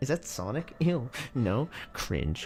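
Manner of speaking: very slow, soft, drawn-out disgusted dismissal. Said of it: "they're like".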